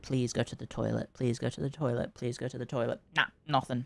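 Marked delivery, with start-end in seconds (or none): 0.0-3.0 kind, gentle, coaxing pleading, repeated. Retelling asking the dog to go to the toilet: retelling own pleading. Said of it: "pleading with her, going".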